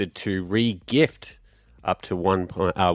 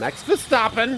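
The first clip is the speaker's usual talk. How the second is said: mock German accent, higher. Saying a driver's name in a quiz, put-on German accent. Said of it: "Just 'cause you do it with an accent".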